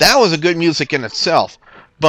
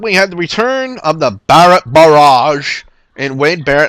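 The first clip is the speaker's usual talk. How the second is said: loud, horrible put-on English accent; 5 dB louder than usual. Announcing the return of Wade Barrett: horrible put-on English accent. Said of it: "that's a horrible English accent".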